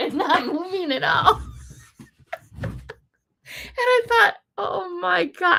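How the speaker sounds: words broken by laughter. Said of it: "I know I'm laughing".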